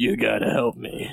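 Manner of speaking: low, sultry, seductive, sexy penguin voice. Voicing a penguin in a shared story, in a sexy penguin voice. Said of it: "that's my sexy penguin voice".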